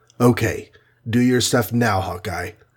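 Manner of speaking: ordinary delivery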